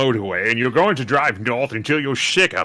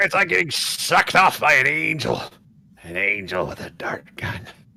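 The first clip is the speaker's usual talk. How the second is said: slow, poor attempt at a pirate voice. Speaker recounts practicing a pirate voice in traffic, Venture Brothers captain voice. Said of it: "trying to work on my pirate voice".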